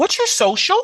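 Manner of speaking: rising lift at the end on social. Asking someone for their social while training people: voice rising on social. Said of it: "So like my voice goes up".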